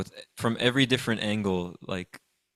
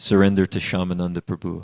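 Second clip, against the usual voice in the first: put-on grave voice, lower-pitched; 3 semitones lower, 6 dB louder than usual. Retelling a story, voicing an unknown visitor to the king, in a grave voice. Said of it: "in like a very like grave voice".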